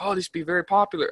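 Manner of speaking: bad put-on Chinese accent. Retelling what shop owners in china said, in a bad chinese accent. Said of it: "I'm doing a Chinese accent".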